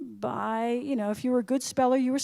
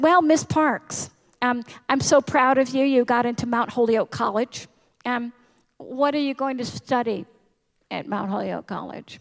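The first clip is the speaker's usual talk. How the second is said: loud, overbite-style voice; 7 dB louder than usual. Retelling what an English teacher said, imitating a teacher's overbite speech. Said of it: "she had an overbite, so she talked like this".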